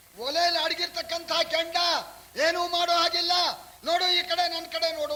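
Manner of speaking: high, arrogant, taunting voice.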